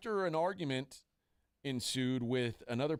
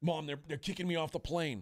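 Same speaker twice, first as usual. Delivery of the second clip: play-acted, frantic, panicked, stammering, stumbling words; 3 semitones higher than usual. Retelling a first-time flyer's words on a plane: imitating a panicking man. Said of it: "was having a panic attack".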